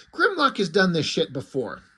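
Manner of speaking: plain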